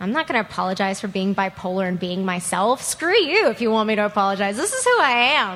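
plain

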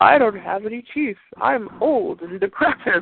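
slow, derisive, mocking taunt. Retelling how they mocked a man who talked trash: mocking imitation of him. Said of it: "I just started mocking him like".

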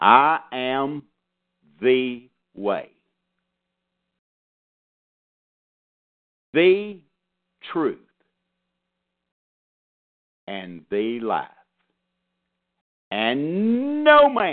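very slow, deliberate, drawn out word by word. Quoting a scripture verse again for listeners to think about: quoted real slow. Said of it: "let me just quote that real slow".

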